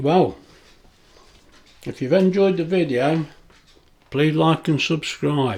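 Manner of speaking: speech through a full mouth. Eating cake on camera and signing off to viewers, talking with mouth full. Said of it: "Talking with my mouth full".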